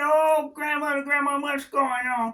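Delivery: all-out desperate screaming. Telling a story about a glue trap, the speaker imitates someone screaming to his grandma. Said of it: "he was screaming".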